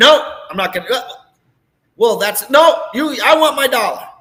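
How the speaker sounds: very loud, rising, demanding, browbeating rant. Acting out a caller who browbeats the clerk over a dollar: acting a browbeating customer. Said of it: "getting browbeat the heck out of them".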